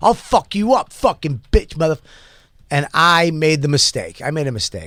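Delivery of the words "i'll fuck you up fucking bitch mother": put-on screaming, higher pitch. Retelling a stranger screaming while walking ahead: imitating someone screaming. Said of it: "he's still screaming".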